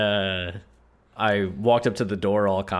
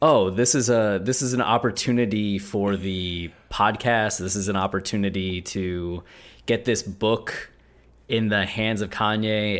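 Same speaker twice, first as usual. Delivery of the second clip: ordinary delivery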